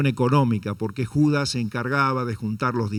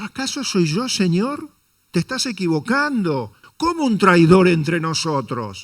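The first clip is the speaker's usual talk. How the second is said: mock indignant, incredulous, high pitch; 5 semitones higher than usual. Speaker acts out the disciples questioning the Lord, as if expecting no. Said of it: "ellos lo decían con otra entonación esto, como esperando una respuesta negativa".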